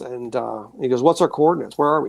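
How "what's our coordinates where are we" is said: put-on radio-style voice. Retelling a radio call, imitating a lost pilot. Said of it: "You know, like this".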